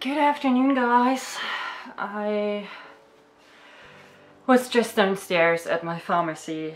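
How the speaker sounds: winded, breathing hard. Greeting the audience after coming back from the pharmacy, out of breath. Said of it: "I'm kind of out of breath".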